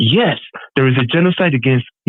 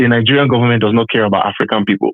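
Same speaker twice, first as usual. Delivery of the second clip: ordinary talk, nothing marked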